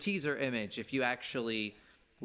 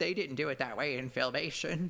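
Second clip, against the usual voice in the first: put-on cranky, grumpy old man voice; 3 semitones higher than usual. Imagining people objecting to plot points, the speaker voices one: grumpy old man voice. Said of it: "I love your grumpy old man voice".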